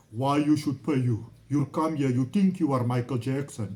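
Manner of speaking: haughty, loud, arrogant put-on Turkish accent, broken English. Quoting the owners' reply about why he should be paid: mock-arrogant broken Turkish accent. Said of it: "this broken Turkish accent, very arrogant".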